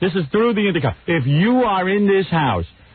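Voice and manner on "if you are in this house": acted-out yelling, higher pitch. Retelling calling for Allison over the intercom: imitating own yelling. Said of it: "he sees that I'm yelling for Allison".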